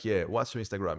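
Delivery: cocky, overconfident, too-sure-of-himself tone. Showing the wrong way to ask for Instagram: showing a too cocky ask. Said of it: "the too cocky either".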